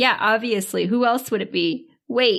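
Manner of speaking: usual speaking voice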